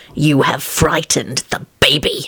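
low, hissed words. Lupin, striding past Tony as a baby cries down the hallway, hissing. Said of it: "he hissed as he strode past Tony".

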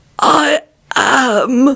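croaking whispery voice. Narrating a story, voicing the ancient fellow's reply: croaking whispery voice. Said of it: "he croaked out in a whispery voice".

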